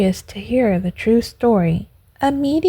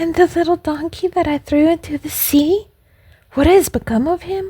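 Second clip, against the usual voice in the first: high, trembling, quavering voice; 6 semitones higher than usual. Reading a story aloud, the poor man asks a question: quavering voice. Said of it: "he asked in a quavering voice".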